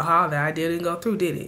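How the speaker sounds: ordinary delivery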